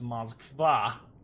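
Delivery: Moskva with stress on final syllable -va. Pointing out how to say the cruiser's name, stress on last syllable of Moskva. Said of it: "the emphasis on the last A".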